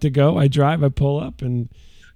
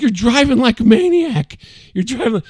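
high, raised yelling; 8 semitones higher than usual. Retelling yelling at his wife while she drove home: retelling a yell. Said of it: "I was yelling at my".

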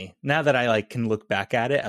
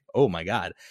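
put-on flirty feminine tone, lower pitched; 4 semitones lower than usual. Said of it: "just the way she said it too".

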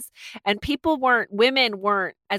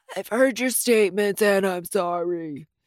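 put-on frail, weak, feeble elderly old-man voice. Describing his courtroom apology, imitating Joe DeAngelo's feeble old-man voice. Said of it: "he talks like an old man".

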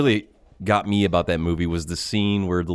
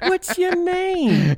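put-on creepy old man voice, pitched higher; 3 dB louder than usual. Retelling how he stares into the screen, imitating Kane. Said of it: "Just the way he talked".

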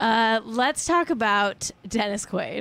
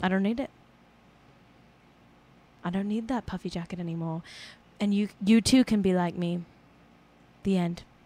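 put-on English accent; 2 semitones lower than usual. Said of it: "That's my impression of [name]".

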